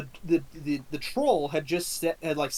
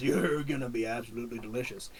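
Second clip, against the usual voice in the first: deep, lumbering monster troll voice; 4 semitones lower, 4 dB quieter than usual. Voicing a troll lifting a character to cook: troll voice. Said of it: "It picks up Bigsby again ... and he goes".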